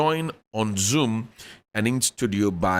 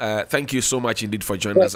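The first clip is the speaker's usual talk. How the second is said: normal talking voice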